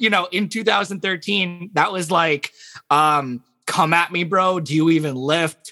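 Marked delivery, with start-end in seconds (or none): 3.6-5.7 yelling. Retelling what was yelled when told to shout gamer stuff: retelling own shout. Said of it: "just shout a bunch of gamer stuff".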